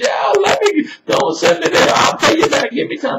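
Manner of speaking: high-pitched, desperate pleading beg. Acting out the servant in debt begging his master: acting out begging. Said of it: "he's just begging".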